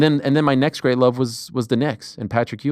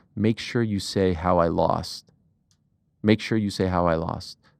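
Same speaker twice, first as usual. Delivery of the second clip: whispered, lower and quieter voice; 6 semitones lower, 5 dB quieter than usual. Retelling what a fighter said before a taped interview: imitating Rampage Jackson whispering. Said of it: "he leans over to me and whispers".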